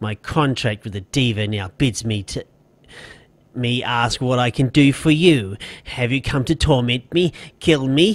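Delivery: words forced through gritted teeth and clenched jaw. Turning his attention back to you after ranting, he speaks through gritted teeth. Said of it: "speaks through gritted teeth".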